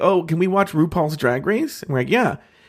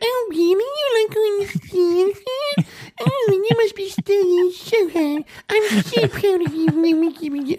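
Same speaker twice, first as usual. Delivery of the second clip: weird, mocking put-on voice, much higher, slower; 14 semitones higher than usual. Retelling two people talking strangely, imitating her in a weird put-on voice. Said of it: "both of them put on these weird voices".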